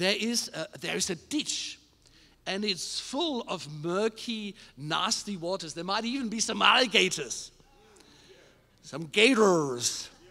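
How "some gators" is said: put-on American accent. Preaching about the Old Testament, saying a word in a fake American accent. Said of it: "That's my fake American accent for the moment".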